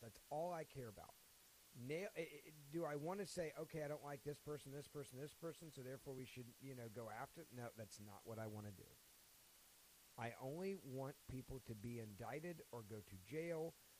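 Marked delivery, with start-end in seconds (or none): none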